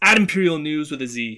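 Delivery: pushy, hard-hitting, aggressive and forceful. Giving listeners the podcast's Twitter handle: aggressive. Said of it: "I don't know why I said that so aggressive".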